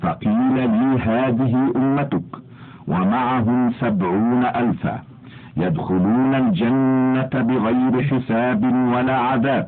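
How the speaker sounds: ordinary delivery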